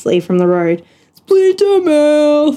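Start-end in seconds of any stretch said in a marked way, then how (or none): 1.1-2.6 high, jeering, mocking yell. Narrator reads a gang member jeering from the road, yelled taunt. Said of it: "Yelled Gribble".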